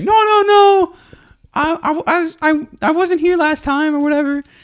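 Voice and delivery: very high, slowed, panicky voice. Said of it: "trying to, like, defend himself, saying".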